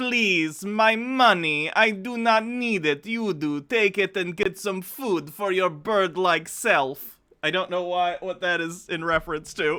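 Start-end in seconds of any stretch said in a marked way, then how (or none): 0.0-7.2 slow, drawn-out, put-on Slavic grandmother voice. Answering a request sent with bits: Slavic grandmother voice. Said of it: "Slavic grandmother voice".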